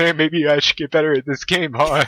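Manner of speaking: smug, self-satisfied, teasing mock modesty. Retelling a game win while both opponents scream at him, retelling a smug taunt. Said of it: "huge ass smug grin on my face".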